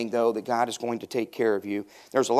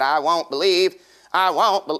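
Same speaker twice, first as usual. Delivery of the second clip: pitched-up, doubting, doubtful voice; 5 semitones higher, 4 dB louder than usual. Telling the Bible story of Thomas doubting; Thomas voice. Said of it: "That's my Thomas voice".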